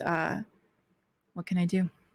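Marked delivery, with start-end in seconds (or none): 1.3-1.9 quiet whisper. Voicing a character who sidles up to a player: quiet whisper. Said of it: "just kinda quietly sidles up to you and just whispers".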